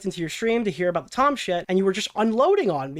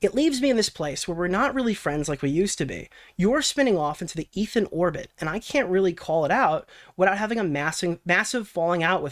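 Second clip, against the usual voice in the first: ordinary talk, nothing marked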